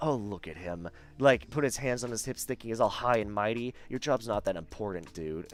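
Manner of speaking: aggressive, hushed, vehement, angry half-whisper. Retelling what his ex said about a man, imitating an aggressive half-whisper. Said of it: "she literally whispered this vehemently out loud, like very aggressively".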